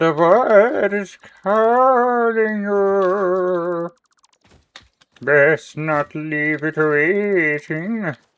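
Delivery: shrill, very high cracking voice, long drawn-out you. The speaker does an impression of the crack that almost sent them away. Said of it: "That's my impression of the crack".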